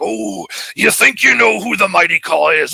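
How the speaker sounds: loud, high, big pro-wrestler promo delivery. Retelling walking around in costume cutting a wrestling promo: Macho Man voice. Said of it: "the years I spent imitating the Macho Man".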